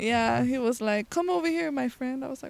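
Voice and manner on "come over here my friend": put-on slight Cuban accent, a touch higher pitched. Retelling what a man in San Diego said, in a little Cuban accent. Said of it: "A little Cuban accent?".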